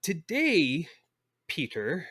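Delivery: put-on British accent, high. Speaker addresses the other speaker pretending to be his mother, in a put-on British accent. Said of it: "That was the best British accent I'll try to do".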